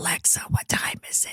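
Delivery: whispered, hushed, with no voice at all. Retelling asking Alexa the time with no voice: imitating a whisper. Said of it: "When I had no voice".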